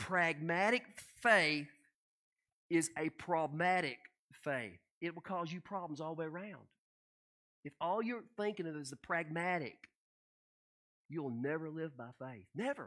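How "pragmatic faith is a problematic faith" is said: slow, careful, word by word, breaking mid-phrase. Speaker takes care over a word he says he always messes up, said slowly. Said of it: "I gotta say this slow".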